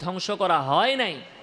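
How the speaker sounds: usual speaking voice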